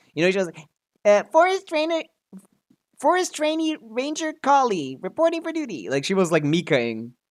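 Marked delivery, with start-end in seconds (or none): 1.1-5.9 very high-pitched, lifted-up character voice. Imitating a character's old voice in the game: high-pitched Kali voice. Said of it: "She's not going as high pitch as she used to".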